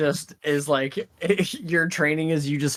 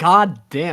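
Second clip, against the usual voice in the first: put-on contemptuous groan, louder; 6 dB louder than usual. Retelling own past reaction in a game session: imitating own contemptuous reply. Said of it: "just the contempt in my voice".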